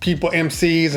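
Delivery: ordinary delivery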